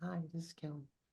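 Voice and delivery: very quiet, high, soft half-whisper. Comparing everyone's volume, the speaker imitates Kelly: imitating Kelly half-whispering. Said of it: "Kelly whispering like she's in the library".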